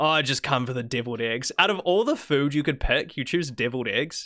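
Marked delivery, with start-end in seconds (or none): none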